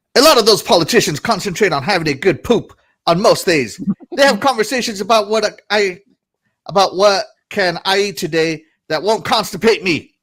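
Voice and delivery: angry, mad-sounding reading-aloud voice. Speaker reads a passage aloud, trying it in an angry voice. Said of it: "Maybe angry voice will work for this one".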